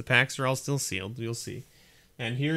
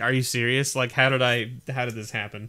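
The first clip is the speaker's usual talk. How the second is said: ordinary talk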